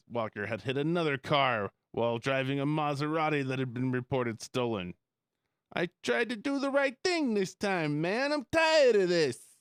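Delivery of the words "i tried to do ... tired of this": put-on 1940s New York accent, much higher pitch. Reading a news story, the host voices the arrested driver in a 1940s New York accent. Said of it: "He talks like a 40s New Yorker".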